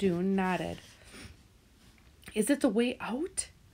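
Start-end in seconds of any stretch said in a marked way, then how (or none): 2.3-3.5 fierce whisper, higher. Dune has just told Lena he opened the door; she asks: fierce whisper. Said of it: "Lena whispered fiercely".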